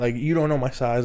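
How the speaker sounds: plain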